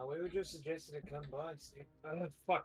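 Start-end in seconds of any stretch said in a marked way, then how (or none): 0.1-1.8 put-on slipped-in, unplanned New Zealand accent. A player's character answers cloaked figures at the front of a house, New Zealand accent. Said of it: "Why did I s- do a Kiwi accent?".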